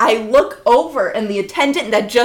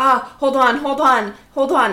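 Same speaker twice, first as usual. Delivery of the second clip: flustered, panicked, frantic voice; 2 semitones higher than usual. Retelling a friend's words at the top of a jump: imitating someone panicking. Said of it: "and she's panicking".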